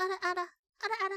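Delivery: squeaky, high-pitched little gremlin chatter. Showing a silly high voice to others on a call: high-pitched gremlin voice. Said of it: "Do I hear a gremlin ada ada?".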